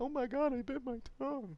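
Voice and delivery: very high, rattled, put-on squealing voice. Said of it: "And they're like".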